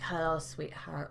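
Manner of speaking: put-on lip-smacking voice. Describing a caller who seems to lick his lips, imitating a lip-licking caller. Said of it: "It's like he's licking his lips every time he speaks. He's like".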